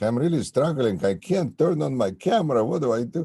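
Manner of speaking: heavy put-on Russian accent. Retelling what an attorney said at a court hearing: imitating a thick Russian accent. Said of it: "with a thick Russian accent".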